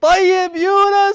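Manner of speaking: very high, slow, loud, drawn-out call.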